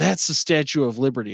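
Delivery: acted-out annoyed, irritated, pissed-off delivery. Retelling a woman turning back to correct a joke: imitating an annoyed woman. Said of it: "And she's kinda pissed off".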